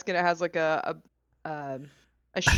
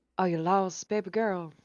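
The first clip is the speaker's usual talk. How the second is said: very slow, put-on Southern US accent with drawl; 5 dB quieter than usual. Reading a line aloud after announcing an accent: southern accent. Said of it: "I'm gonna do it in a southern accent".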